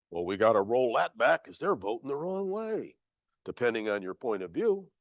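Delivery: low, soft sarcastic tone.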